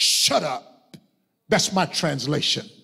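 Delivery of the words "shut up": low, stern, rough-edged voice. Retelling Jesus addressing the spirit in a man: retelling a stern command. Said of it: "in a stern voice".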